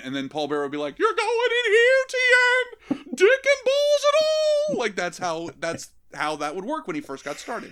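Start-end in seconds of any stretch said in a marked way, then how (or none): 1.0-4.8 very high, loud, shrill voice. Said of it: "repeat things in a high, shrill voice".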